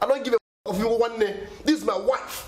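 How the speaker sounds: high-pitched, furious, angry shouting. In a drama scene, confronting a man over his wife: shouting. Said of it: "I'm shouting on you".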